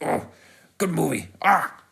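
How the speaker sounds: high grunting noises and sound effects. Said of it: "doing grunts and sound effects and just being like".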